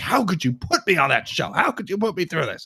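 outraged, angry venting.

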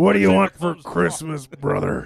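fake gruff tough-guy voice. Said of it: "it sounds like Hulk Hogan".

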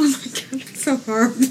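words spoken while laughing. Reacting to an ironic story about a fan, laughing while talking. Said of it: "I'm sorry I'm laughing at that".

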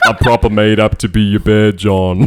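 put-on loud Essex accent. Quoting the only line remembered from Love Island, use a Love Island Essex accent. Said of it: "I fucking love that accent".

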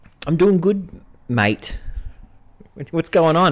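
over-the-top, exaggerated Australian accent, sing-song. Playing a character who greets another player: exaggerated Australian accent. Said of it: "he had a particularly Aussie accent".

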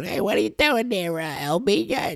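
very high, bad put-on little-lady voice. Speaker mimics a little lady down the hall, poor imitation of a little lady. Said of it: "So poor imitation".

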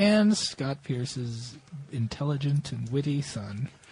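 public-radio announcer voice. Introducing Scott Pierce's son on the show, in an NPR radio voice. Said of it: "How can you talk like you're on NPR?".

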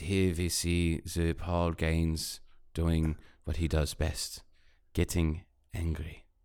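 slow documentary-style narrator voiceover. Pitching a short film, narrating a coworker's day: Werner Herzog voiceover. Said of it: "this great Herzog".

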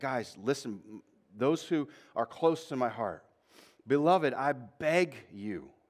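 mock earnest, slow, heartfelt begging voice. Acting out the writer's words to the church: imitating a heartfelt plea. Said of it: "you hear the shift in the tone".

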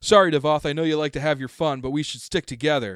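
very loud, high shout. Voicing a character calling out over the sound of combat: Scram shouting. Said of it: "Scram shouting".

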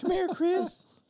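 very high, loud, shrill, with whistled s. Joking about whistling S's while tasting, doing a Herbert from Family Guy voice. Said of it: "whistling my S's over here like Mister Herbert from Family Guy".

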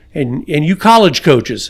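ordinary talk

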